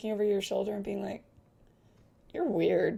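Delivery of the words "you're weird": put-on little girl voice. Voicing a little girl peering over a player's shoulder: voicing a little girl. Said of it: "the little girl is standing behind you on tiptoes".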